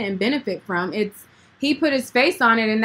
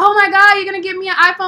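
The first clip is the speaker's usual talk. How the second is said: mock ecstatic little girl voice, high, loud, gushing; 8 semitones higher, 6 dB louder than usual. Retelling how a young fan reacted to a promised iPhone: imitating an excited girl. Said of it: "all happy and stuff".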